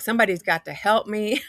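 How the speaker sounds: acted crying, tearful voice. Retelling a night something knocked and said their name, imitating own past crying plea. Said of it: "I'm in a puddle of tears. I'm crying".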